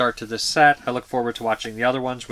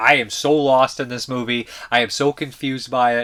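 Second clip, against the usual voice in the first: usual speaking voice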